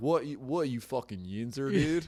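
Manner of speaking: put-on Philadelphia accent. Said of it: "he had, like, a Philly accent".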